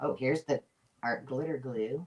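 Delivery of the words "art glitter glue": light Southern accent, spoken softly. Looking through craft supplies, naming the art glitter glue; light southern accent. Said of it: "I would say that with a little southern accent".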